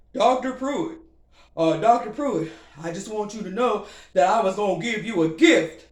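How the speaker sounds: stammering, said loudly. Retelling a call from a fella who disparaged the speaker: imitating a caller's voice. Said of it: "let me do his voice".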